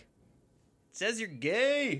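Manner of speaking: put-on, squeaky-high, old-school schoolyard taunt. Retelling what a son said when reading a broom: imitating son's old-school taunt. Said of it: "the old school".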